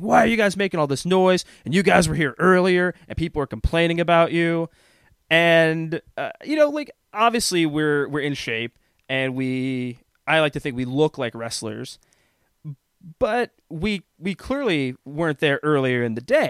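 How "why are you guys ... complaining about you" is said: mock man's voice yelling a telling-off. Retelling how a gym worker yelled at them for noise: imitating a man yelling. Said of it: "just yells at us".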